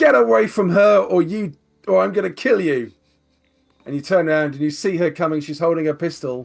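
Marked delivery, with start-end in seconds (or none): 0.0-2.9 gritty, rough, loud threatening shout. Voicing Cherry threatening from behind with a pistol: Cherry shouting a threat. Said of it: "you hear a voice shout".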